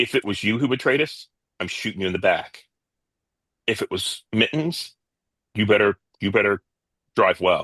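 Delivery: stage whisper, mechanical-sounding. A game master voices Wump leaning into the driver's ear: Wump's mechanical half-whisper. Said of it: "I whisper in your ear with that mechanical voice".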